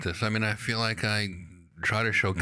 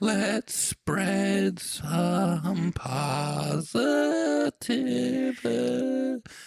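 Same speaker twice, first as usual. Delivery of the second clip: high, very slow fairy voice. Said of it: "that was a positivity fairy, Larry".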